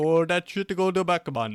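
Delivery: fake Jamaican accent, loud and high. Friends trading silly accents, one showing off: Jamaican accent. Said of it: "Why you turn Jamaican?".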